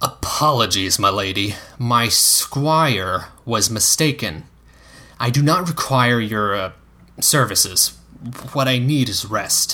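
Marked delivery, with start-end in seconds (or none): none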